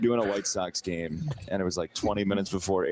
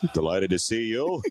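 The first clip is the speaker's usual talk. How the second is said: broadcast play-by-play sportscaster delivery; 3 semitones higher, 3 dB louder than usual. Answering a request for an impression: Sean McDonough voice. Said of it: "What about if we could get a Sean McDonough".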